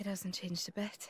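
depressed, downcast. Game character arriving back at Tarragoth, sounding depressed. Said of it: "don't sound so depressed".

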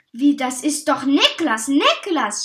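very loud shrieking scream with swooping pitch. Aunt Tinne calls out after Niklas, screaming. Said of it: "Schrie Tante Tinne".

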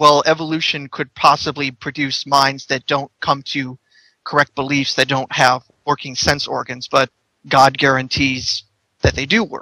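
ordinary talk, nothing marked

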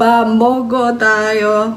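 dayo stretched out long in a cute way. Explaining how kids end sentences to sound cute, demonstrating in cute baby talk. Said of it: "Kids will end their sentences this way to sound cute".

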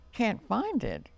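sharp, exclaiming outburst. Narrating a character's response to a bunny's complaint: exclaiming. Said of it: "exclaimed Robin".

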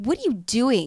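slow, drawn-out, suspicious voice.

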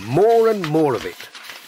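plain

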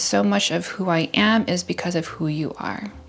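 ordinary talk, nothing marked

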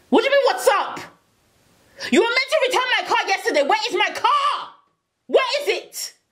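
enraged, very high-pitched furious shrieking. On the phone to someone who hasn't returned his car, yelling furiously. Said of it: "Honey, calm down".

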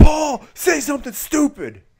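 put-on very loud, very high angry snarl. Act out Brock taking the mic to address Paul after his cow was curb stomped, imitating Brock snarling mad. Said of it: "he's snarling, he takes the mic and he goes".

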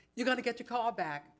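usual speaking voice

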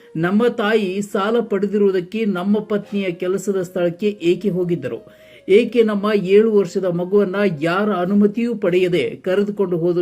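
plain

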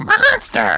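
very high cartoon mom voice. Copying a friend's Marge impression of one word: Marge Simpson voice. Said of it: "You actually did better than him".

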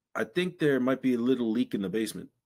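halting broken English. Retelling a man knocking on his window, imitating broken english. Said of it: "he spoke very broken English".

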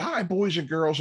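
high puppet-host voice. Retelling how the puppet host came out to greet the kids: JoJo puppet voice. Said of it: "he comes out".

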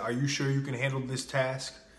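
put-on smirking, teasing tone. Retelling a joke made to a coworker about lifting: imitating own smirking tease. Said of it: "And I said it like that".

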